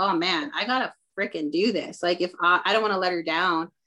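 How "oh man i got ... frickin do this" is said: ordinary talk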